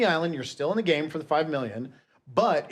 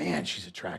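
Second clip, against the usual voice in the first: imitated muttering under breath, lower and quieter; 9 semitones lower, 7 dB quieter than usual. Retelling a remark made while watching with the kids: imitating muttering under breath. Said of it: "under my breath".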